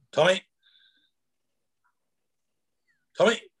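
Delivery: put-on, increasingly panicky, high and loud. Retelling a live-fire drill where a voice called for him, imitating a panicky call. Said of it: "it gets more and more panicky".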